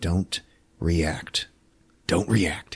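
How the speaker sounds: very quiet, hushed, dead-steady calm tone. Retelling a film scene where a character warns the others: imitating Natalie, real calm. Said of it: "but, like, real calm".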